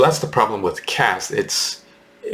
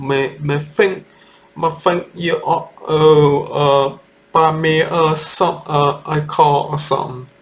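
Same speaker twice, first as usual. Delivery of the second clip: slow, terrible put-on Cockney accent; 6 semitones higher than usual. Describing how a poor girl speaks, terrible Cockney accent impression. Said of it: "terrible impression".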